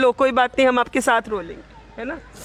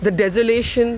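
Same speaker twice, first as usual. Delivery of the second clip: ordinary delivery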